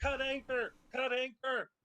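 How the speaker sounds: very high, loud shouting. Playing a character on a ship being shot at, shouting orders. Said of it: "start shouting".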